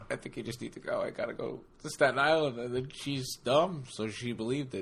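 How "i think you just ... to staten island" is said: tearful, choked-up voice with fake sobs. Retelling own past words while pretending to cry: mock choked-up voice. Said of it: "I got a little choked up".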